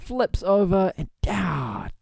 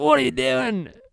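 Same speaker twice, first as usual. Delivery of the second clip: put-on British accent that slips and falters, going higher; 8 semitones higher than usual. Trying the impression again: Jason Statham impression. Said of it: "Jason Statham's".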